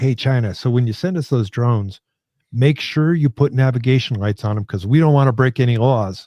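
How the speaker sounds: ordinary delivery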